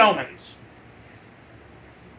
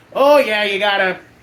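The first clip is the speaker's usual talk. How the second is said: put-on Wisconsin accent, loud. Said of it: "I just gave him, like, a Wisconsin accent".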